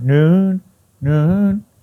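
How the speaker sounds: noon lifted with a rising tune. Demonstrating how English speakers lift a word, with rising question intonation. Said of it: "noon lifts up that word and makes it kind of into a question".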